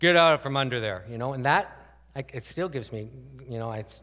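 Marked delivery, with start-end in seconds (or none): 0.0-1.0 big, booming, commanding voice. Recalling hiding when dad came home from work, imitating dad's big voice. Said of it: "his big voice was, ... That's the big voice".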